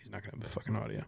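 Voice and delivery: put-on under-breath mutter. Retelling what Coleman said about Gus under his breath: retelling a muttered aside. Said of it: "Coleman under his breath goes".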